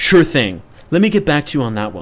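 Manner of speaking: smooth, corporate, business-meeting assistant tone. Imitating ChatGPT answering a request: ChatGPT voice like a business meeting. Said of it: "I talk like I'm in a business meeting".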